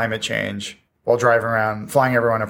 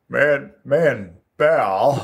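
put-on news anchor voice; 2 semitones higher than usual. Slipping into an impression mid-conversation: Tom Brokaw impression. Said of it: "I was gonna start dipping into Brokaw".

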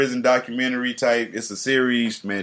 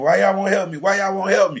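mock screaming, repeated over and over; 8 semitones higher than usual. Retelling a man being beaten while onlookers watched: retelling a scream. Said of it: "He just kept screaming".

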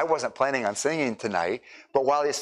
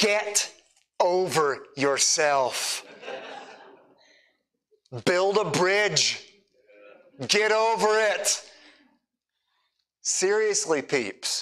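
slow, high, snarky, drawn-out sarcasm; 6 semitones higher than usual. Asking the listeners to permit one moment, then speaking: sarcastic. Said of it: "Permit me one sarcastic moment".

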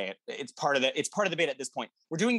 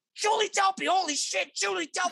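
very high, thrilled, excited half-yell. Recounting jumping up on the couch and shouting at the roommate: retelling a yell, not full volume. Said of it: "not quite full volume, but yelling".

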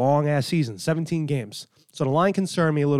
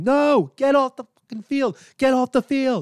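mock very high, screaming yell; 10 semitones higher, 4 dB louder than usual. Retelling yelling at a player to leave the field at a Raider game; retelling own screaming. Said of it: "I'm screaming".

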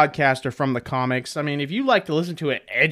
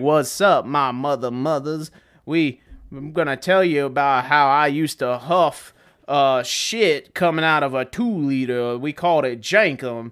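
put-on Southern radio announcer accent. Describing a podcast intro and imitating its host: Theo Von impression. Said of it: "he sounds like this old fucking Southern radio show guy".

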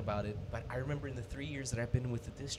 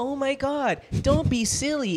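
put-on very high, raised little kid voice; 13 semitones higher, 13 dB louder than usual. Imitating elementary school teachers talking to the kids: imitating teacher's little voice for kids. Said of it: "they have to keep this little voice for the kids".

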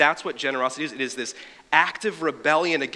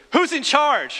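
acted, very high, loud yell; 12 semitones higher, 5 dB louder than usual. Retelling a guy calling out from his car window: imitating someone yelling. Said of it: "yells out his window".

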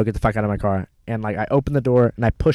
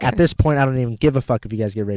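ordinary talk, nothing marked

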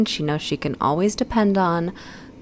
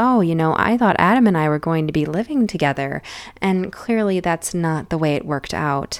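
ordinary talk, nothing marked

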